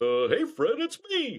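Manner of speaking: high-pitched, slow classic cartoon sidekick voice. Describing an old mascot's voice, the speaker does the Barney Rubble voice. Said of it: "it was the same voice as Barney Rubble".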